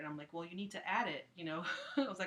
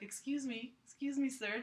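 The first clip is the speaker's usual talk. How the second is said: very gentle, soothing, coaxing tone, pitched up; 7 semitones higher than usual. Speaker retelling tapping a sleeping man's shoulder to wake him, super gentle calming voice. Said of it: "trying to like talk in like a super gentle, calming voice".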